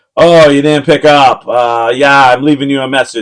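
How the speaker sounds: strongly sarcastic voice. Retelling a dad's voicemail message: imitating a sarcastic voicemail. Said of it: "both of them being, like, really sarcastic".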